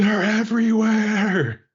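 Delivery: frantic, very high-pitched screaming shriek. A pirate runs from the ballroom through the main hall: screaming.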